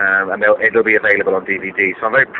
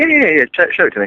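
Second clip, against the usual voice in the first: put-on, forced eager enthusiasm, pitched higher; 9 semitones higher than usual. Retelling their own reply to being offered a look, putting on forced enthusiasm. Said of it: "sound a bit more enthusiastic".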